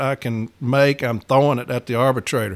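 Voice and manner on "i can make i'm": ordinary delivery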